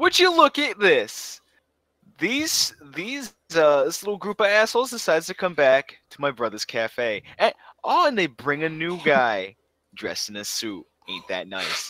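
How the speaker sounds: put-on thick New York accent, swooping, high and loud. Voicing a character greeting a returning group: thick New York Adam Sandler voice. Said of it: "really thick New York Adam Sandler".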